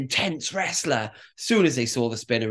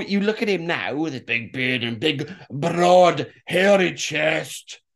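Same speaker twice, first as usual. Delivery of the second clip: Scottish accent impression. Describing a wrestler's look now, in a Scottish accent impression. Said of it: "That was a Scottish impression".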